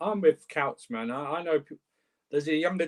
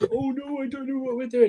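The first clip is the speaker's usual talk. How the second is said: very high, little, squeaky mocking voice; 10 semitones higher than usual. Speaker imitates liverpool fans to the other speaker: mocking little squeaky voice. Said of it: "have the little squeaky voice".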